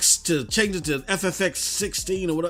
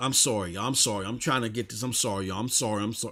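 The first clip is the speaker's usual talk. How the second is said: put-on apologetic voice, lower and quieter; 8 semitones lower, 5 dB quieter than usual. Retelling a failing stream, apologizing to the chat: imitating own apologetic voice. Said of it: "you just could hear it in my voice".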